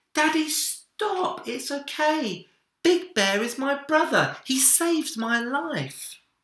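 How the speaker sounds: put-on very high, shrill shouting child's voice. A boy speaks to his father in a story, shouting. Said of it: "he shouted".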